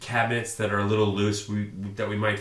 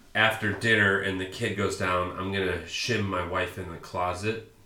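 ordinary delivery

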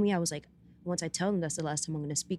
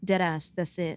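usual speaking voice

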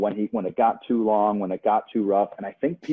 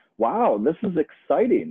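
mock-surprised announcer voice, higher pitch; 6 semitones higher than usual. Recalling the broadcast announcers while rewatching a fight, imitating surprised announcers. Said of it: "with the most surprise they could muster in their voice".

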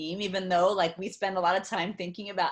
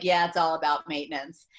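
sarcastic echoing tone, louder; 2 semitones lower, 3 dB louder than usual. Speaker retelling their husband echoing them over their shoulder, imitating a sarcastic echo. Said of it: "I thought he was just kind of being a little bit sarcastic".

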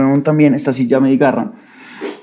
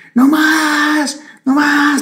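shrill, very high, frantic, crazed scream. Retelling how the upstairs neighbor banged on the floor and yelled, retelling a crazed scream. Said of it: "Y gritaba como una loca".

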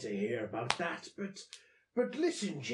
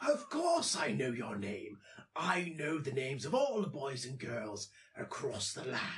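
put-on nature-narrator voice, pitched lower; 3 semitones lower than usual. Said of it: "you sound like David Attenborough".

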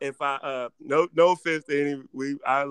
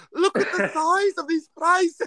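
failed Australian accent, very high-pitched. Doing the accent the speaker announced as Australian: bad Australian accent. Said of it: "I know you said Australian, but that is not how you came".

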